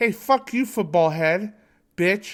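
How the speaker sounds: mean, jabbing cartoon bully voice. Giving an example of a tsundere insulting the boy she likes: Helga Pataki voice. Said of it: "she'd be like".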